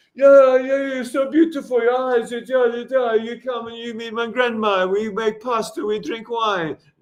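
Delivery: high, sweet-talking Italian man's voice. Retelling how an Italian guy chatted up a girl: imitating an Italian guy. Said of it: "just turns to the next girl in the friend group and goes".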